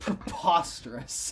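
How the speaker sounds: pointedly sarcastic, pretending to mean it. Joining the hosts' running joke about a company, sarcastic. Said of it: "We're obviously being sarcastic".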